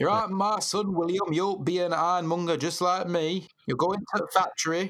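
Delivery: put-on northern English Sheffield accent. Voicing an ironmonger father telling his son William his future, strong northern Sheffield-style accent. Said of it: "really strong northern Sheffield-style accent".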